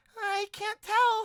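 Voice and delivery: very high fairy character voice. Voicing a fairy who floats close and peers at a player: voicing a fairy. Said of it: "She's like".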